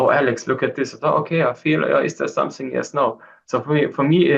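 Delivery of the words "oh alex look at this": ordinary talk, nothing marked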